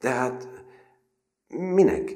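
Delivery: halting, hesitant, altered voice pitched very high. Surprised that the narrator obeyed, the other character asks hesitantly, in a changed voice. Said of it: "Mondta habozva".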